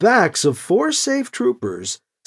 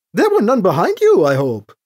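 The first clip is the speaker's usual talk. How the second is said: usual speaking voice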